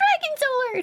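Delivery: put-on grown woman voice. Retelling what a full-grown woman says at the store: imitating a full-grown woman. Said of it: "And she just goes".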